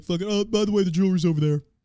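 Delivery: talking dog voice. Speaker voices their dog welcoming robbers who give her a treat, Athena voice. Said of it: "That's my Athena voice".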